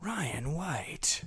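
soft 90s movie trailer announcer voice. Announcing a name from a ranked countdown list, 90s movie trailer voice. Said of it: "Should I say it in like 90s movie trailer voice?".

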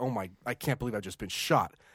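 low, dazed, stunned tone of disbelief. Retelling a shooting victim's words, imitating stunned disbelief. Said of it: "you could hear in her voice like this feeling of disbelief".

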